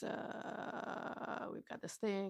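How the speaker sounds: whispered, grave, deadly serious pilot voice. Recounting a scene from an Asylum movie, voicing a pilot: mock-serious pilot voice. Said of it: "Very serious. Uh, pilot voice".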